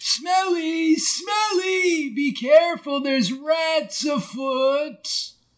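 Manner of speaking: very slow, stretched, drawn-out high yell. Playing a character calling down a sewer grate: yelling in character. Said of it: "So, what are you yelling?".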